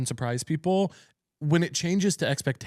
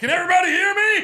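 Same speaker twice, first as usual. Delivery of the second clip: mock, very high, loud screaming; 5 dB louder than usual. Retelling a comic who went on stage without a mic: imitating Molly screaming. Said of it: "dynamo screaming in the room".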